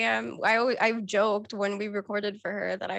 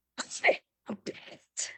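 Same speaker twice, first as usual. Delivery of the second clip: seething, slow, drawn-out whisper full of fury; 2 semitones higher, 5 dB quieter than usual. Performing the character's angry line for the audience: furious character line. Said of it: "she sounds so freaking mad".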